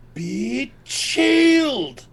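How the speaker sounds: shrill, high, loud shouted yell. Casting a cone of frozen air at the enemies: yelling a spell command. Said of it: "And I yell".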